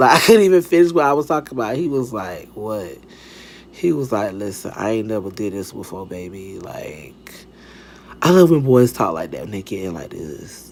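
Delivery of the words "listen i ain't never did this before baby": put-on drawn-out, deepened, very soft, slow boy voice. Retelling what a boy said to her, in a put-on little deep, slow voice. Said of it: "little deep, like, slow voice".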